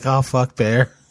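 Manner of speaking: acted sudden worried, startled, alarmed exclamation. Retelling a dog stopping on a hike: retelling own alarmed reaction. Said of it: "this serious look on, I'm like".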